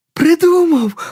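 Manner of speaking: very high, rapturous, delighted shout. A child cries out with a sudden idea, shouting in delight. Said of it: "У захваті закричав Юрчик".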